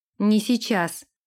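ordinary delivery

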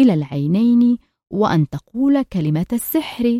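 plain

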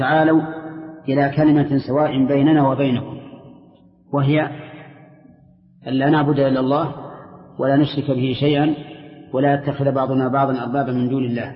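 plain

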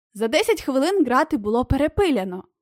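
ordinary delivery

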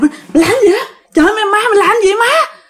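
startled, taken-aback tone.

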